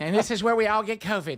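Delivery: flamboyant, high, very feminine voice. Retelling a remark heard in a packed subway elevator: imitating a very feminine voice. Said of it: "very feminine voice ready for the pride parade".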